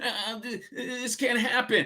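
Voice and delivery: put-on mocking voice, high-pitched, very slow. Mimicking what the other person keeps saying: mocking impression of the listener. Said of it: "This is my impression of you".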